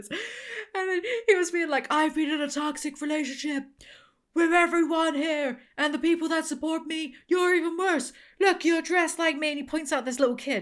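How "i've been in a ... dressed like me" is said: put-on wrestler-style yelling, higher pitch. Retelling a wrestling clip where the wrestler screams at the audience: imitating John Cena yelling. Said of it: "It's John Cena's just yelling at him".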